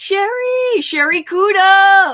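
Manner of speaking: very high, shrill shout with the end drawn out. Calling out to a person by name, then apologizing for it: yelling a name. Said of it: "I'm sorry, that was a yell".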